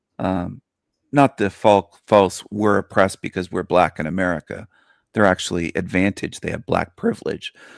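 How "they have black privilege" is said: breaking voice. Speaker mid-argument to an audience, voice cracking. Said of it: "I don't know why my voice cracked there".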